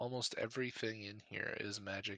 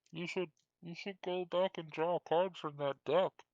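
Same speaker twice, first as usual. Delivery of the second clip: muffled, smothered, raised, pitched-up voice; 8 semitones higher, 6 dB louder than usual. Game master voices someone speaking to Grim from inside his pack, muffled voice. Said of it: "you hear a muffled voice coming out of your pack that says".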